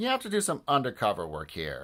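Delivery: ordinary delivery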